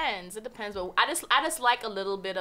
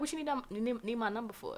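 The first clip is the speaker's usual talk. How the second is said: put-on flirty, playful voice; 2 semitones higher, 7 dB quieter than usual. Acting out a reply to a guy asking for a number: mock flirty reply. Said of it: "I'm a flirter".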